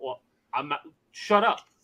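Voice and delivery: put-on passionate, heated, impassioned delivery. Retelling an argument about tipping with his son: imitating himself saying shut up passionately. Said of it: "you said "shut up" with such passion".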